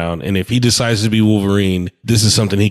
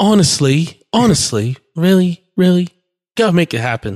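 put-on British accent, higher; 10 semitones higher than usual. Imagining a phone call to Bobby, in a put-on British accent. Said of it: "Is that a British accent?".

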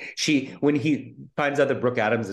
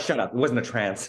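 normal talking voice

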